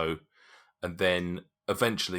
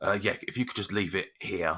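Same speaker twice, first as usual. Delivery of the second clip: put-on older dwarf voice, faster; 2 semitones higher than usual. Narrating a scene, voicing the character who opens the door: older dwarf voice. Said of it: "he's a relatively older dwarf".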